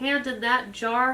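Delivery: ordinary delivery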